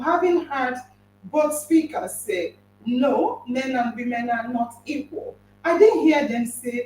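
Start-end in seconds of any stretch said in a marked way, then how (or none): none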